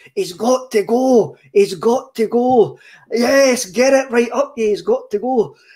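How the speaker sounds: put-on excited, carried-away, shouting commentator voice. Retelling an over-the-top Celtic fan commentating a game, imitating his shouting. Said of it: "the boy starts shouting".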